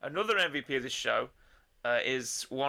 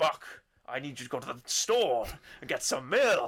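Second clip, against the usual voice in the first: first letter of each word punched hard. Explaining the secret of the Kingpin impression, doing it with stressed first letters. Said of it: "To emphasise the the first letter of the word".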